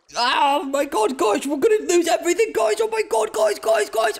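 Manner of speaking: over-the-top fake panic, shrill, very high and rising. Speaker mocking how YouTubers react, mock panic imitating YouTubers. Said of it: "I don't do that, okay?".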